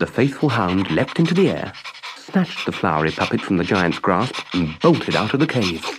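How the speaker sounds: ordinary delivery, nothing marked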